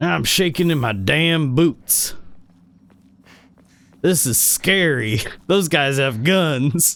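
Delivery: cowardly cowboy voice with pretend fright. Joking about going back to Red Dead, the speaker voices Arthur as a mock-scared cowboy. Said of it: "I'd have Arthur constantly be like".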